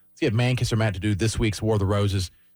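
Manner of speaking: ordinary talk, nothing marked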